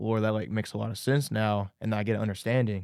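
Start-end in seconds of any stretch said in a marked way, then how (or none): none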